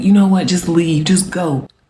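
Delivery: tearful voice, crying through tears. Retelling a quarrel where she starts crying and says to leave: imitating someone crying. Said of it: "And she starts crying".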